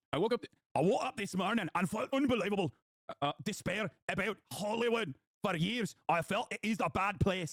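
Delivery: put-on Scottish accent. Quoting a woman's post about despair, as you remind listeners that she is scottish, in a put-on scottish accent. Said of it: "I'm doing her accent correctly because remember, she is Scottish".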